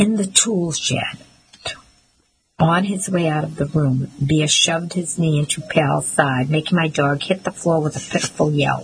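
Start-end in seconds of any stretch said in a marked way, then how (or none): 0.0-1.2 sneering delivery. Leaning down over the narrator and the dog during a confrontation, sneering. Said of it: "he sneered".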